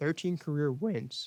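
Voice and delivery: voice breaking and cracking mid-phrase. Speaker corrects himself mid-sentence while listing stats, voice cracking. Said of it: "that's a voice crack".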